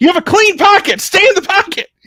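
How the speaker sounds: acted yelling. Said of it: "I'm screaming at him".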